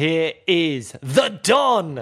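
slow, drawn-out ring announcer voice.

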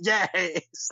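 cross, curt, confrontational, angry-sounding tone. Retelling own reaction that seemed confrontational: imitating an angry reaction. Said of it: "like I'm angry with them".

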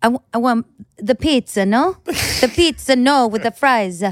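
put-on Italian accent, broken English. Mimicking ordering in a restaurant abroad, broken English with an Italian accent. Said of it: "speaking broken English with an Italian accent".

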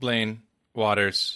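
flat, emotionless, drained of all feeling. Podcast co-host gives his name after the host introduces him, with no emotion. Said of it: "with no emotion".

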